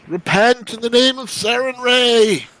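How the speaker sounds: loud, high-pitched war yell.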